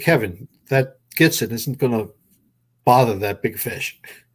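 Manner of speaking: ordinary talk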